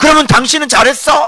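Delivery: put-on, abrupt, high-pitched outburst out of nowhere. Acting out a fearful person's sudden reply: imitating a sudden yell. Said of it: "이렇게 갑자기 소리를 지르는 거야".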